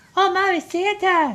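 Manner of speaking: put-on squeaky child voice. Describing kids at a movie theater, imitating a squeaky little child. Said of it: "I'm talking little squeaky voice little children".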